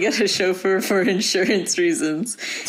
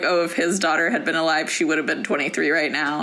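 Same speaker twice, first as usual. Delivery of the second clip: ordinary talk, nothing marked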